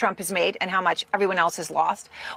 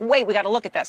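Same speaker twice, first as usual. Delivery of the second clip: ordinary talk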